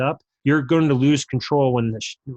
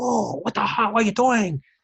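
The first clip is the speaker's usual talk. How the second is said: frantic, panicked delivery in a put-on Spanish accent; 9 semitones higher than usual. Retelling a player's dad freaking out, in a put-on spanish accent. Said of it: "And his accent was great".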